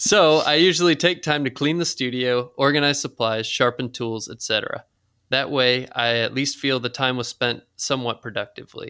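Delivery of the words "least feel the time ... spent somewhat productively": ordinary talk, nothing marked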